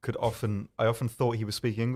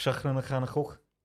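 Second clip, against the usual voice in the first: broad, thick, phlegmy Liverpool Scouse accent; 4 semitones higher than usual. Trying out a phrase the way it sounds in that accent: thick phlegmy scouse accent. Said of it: "Your mouth just becomes a phlegm waterfall".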